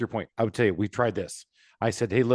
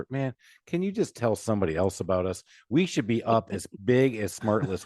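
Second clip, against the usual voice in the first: ordinary delivery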